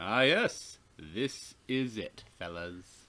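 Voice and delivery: odd, weird, slow, drawn-out delivery. Reading a game character's line aloud: read weirdly. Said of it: "That was read weirdly".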